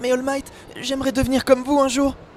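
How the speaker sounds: very high pitch, delicate, fragile and breakable-sounding. Switching between character voices to a higher one: high fragile Izuku Midoriya voice. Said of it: "une voix bien plus aiguë, être un peu plus fragile".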